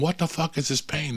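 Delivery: put-on restrained cry of pain. Speaker retelling waking up in pain, retelling own yelling. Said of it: "I wish I had footage of me just yelling".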